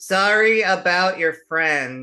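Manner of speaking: booming, very loud, slow, high, drawn-out yell. Player yelling in character, very loud and slow, like an American tourist. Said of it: "very loud and slow, like an American tourist".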